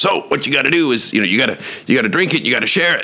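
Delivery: high, scratchy, rough-edged voice. You act out Dexter, a big leader in your business, telling everybody what to do, in Dexter's scratchy voice. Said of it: "he had this kind of scratchy voice".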